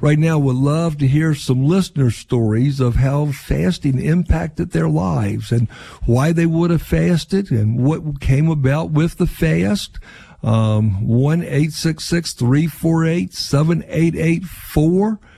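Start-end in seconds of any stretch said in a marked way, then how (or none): 10.4-15.2 digits rattled off rushed, much too quickly. Giving listeners the call-in number for their stories, said too fast. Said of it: "Probably set that too fast".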